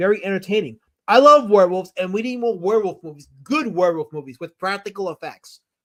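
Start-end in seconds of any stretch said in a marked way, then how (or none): none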